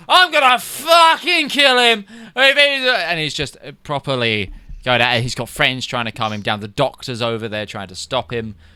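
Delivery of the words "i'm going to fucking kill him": put-on very high, full-throated, drawn-out drunken yell. A game master voicing a drunk man marching around town, shouting at top of lungs. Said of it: "shouting at the top of his lungs".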